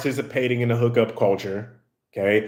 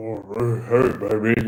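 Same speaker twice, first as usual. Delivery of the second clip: fake deep voice, drawn-out hey; 2 semitones lower than usual. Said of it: "trying to make your voice deeper".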